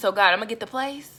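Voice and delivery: ordinary talk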